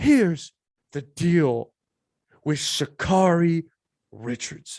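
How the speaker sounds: slow, halting, every word spaced out and over-enunciated. Mocking someone's video with a slow, enunciated Emmanuel Acho impression. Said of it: "you're so good at talking slow and enunciating".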